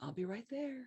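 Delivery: very quiet, high, hushed, calm and patient. Retelling what a very patient man said, the speaker is imitating a calm, patient man. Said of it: "so calm and cool and very patient".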